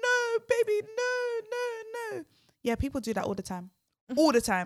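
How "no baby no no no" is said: very high, slow, drawn-out tearful pleading voice. Retelling a bride pleading with her groom: imitating someone crying. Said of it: "she was crying like".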